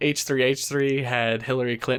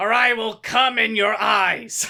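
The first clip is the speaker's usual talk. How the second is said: very high cartoon parrot voice; 9 semitones higher than usual. Doing a mock celebrity cameo praising the channel: Gilbert Gottfried impression. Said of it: "I am Iago from Aladdin".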